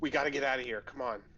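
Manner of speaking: forceful, loud stage whisper. Player's character moving up to a companion to urge leaving, loud whisper. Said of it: "just loud whisper".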